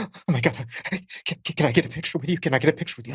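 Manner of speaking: panting, stumbling, breathless, hyperventilating star-struck gush. Retelling a fan asking for a picture: imitating someone hyperventilating.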